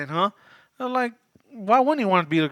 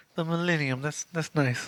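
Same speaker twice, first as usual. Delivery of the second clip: put-on creepy voice, quieter; 3 semitones lower, 7 dB quieter than usual. Retelling a movie scene, quoting Billy: creepy Billy imitation. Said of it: "the creepiest way possible".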